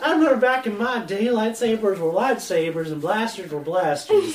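put-on high, loud, kooky crazy old grandpa voice. Joking with the other hosts, he slips into his crazy grandpa voice. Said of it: "your like crazy grandpa voice".

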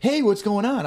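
very high, squeaky cartoon dog voice. Retelling own morning greeting to a partner who just woke: Bugs Bunny cartoon dog voice. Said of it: "I'm like that, that dog in that Bugs Bunny cartoon".

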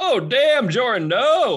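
acted, high, drawn-out half-yelled cry. Voicing Breck as an ally is smashed by a fist: yelling in character. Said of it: "Breck kinda yells".

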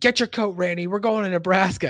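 play-acted shouting, high and loud. Retelling an episode scene where one character yells to another: imitating someone yelling. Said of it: "she yells to Randy".

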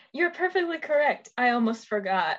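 mock self-satisfied, smug, gracious, all-knowing tone. Retelling how she answers him after looking him up and down: imitating a smug reply. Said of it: "with the most smug s-, smirk on her face".

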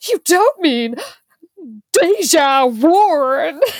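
put-on aghast, incredulous, high, drawn-out shocked disbelief. Retelling Lila's reaction to secondhand shopping: imitating shocked disbelief. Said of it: "a shocked Lila says".

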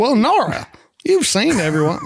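put-on Southern accent. Echoing another speaker's reading of a character's line: imitating a Southern accent. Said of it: "I like how Nora gets a Southern accent".

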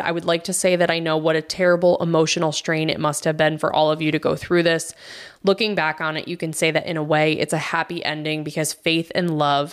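ordinary talk, nothing marked

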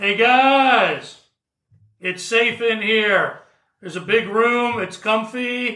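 loud, far-carrying calling out. A player's character calls to friends from further into the cave, yelling. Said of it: "So I am going to yell from where I am at".

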